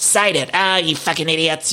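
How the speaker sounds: mock, mild, half-hearted light yelled outburst. Retelling a castmate storming out of a house: imitating someone yelling. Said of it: "she's yelling".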